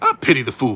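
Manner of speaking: loud tough guy delivery. Doing a Mister T line: Mister T impression. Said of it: "It was a little Mister T E".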